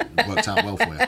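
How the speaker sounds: mocking, laughing delivery, high-pitched and loud.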